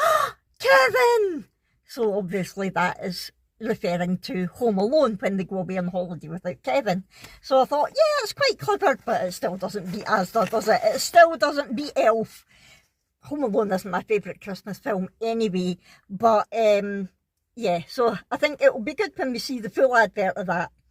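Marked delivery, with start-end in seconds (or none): 0.0-1.4 slow, high calling shout. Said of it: "the mum leans forward and goes".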